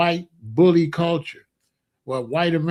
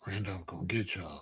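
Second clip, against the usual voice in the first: put-on scared voice, lower and quieter; 9 semitones lower, 17 dB quieter than usual. Retelling how mom warned the kids about Randolph: imitating mom sounding scared. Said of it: "sometimes my mom would be so scared".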